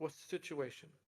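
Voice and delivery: low, hushed whisper. Describing a usual routine, the speaker quotes how she usually asks, in a low voice. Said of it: "She usually says in a low voice".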